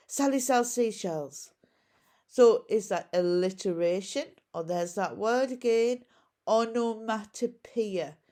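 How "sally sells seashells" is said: very fast, rapid-fire speech. Demonstrating alliteration, the speaker repeats the tongue twister once more, said very fast.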